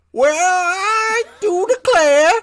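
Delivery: put-on very high, loud old prospector drawl, long I. The wrong audio track plays on the podcast: an old prospector voice. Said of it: "that was the old prospector track".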